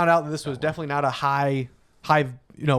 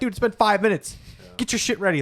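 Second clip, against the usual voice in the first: acted-out high, rapid-fire yelling; 6 semitones higher than usual. Retelling hurrying a slow racer when his name was called: imitating own past yelling. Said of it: "I'm yelling at Mang".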